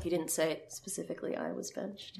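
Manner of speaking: very quiet, breathy, near-whispered. Recounting a dispute, the speaker quotes someone's reply; retelling a quiet remark. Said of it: "Tabitha just quietly goes".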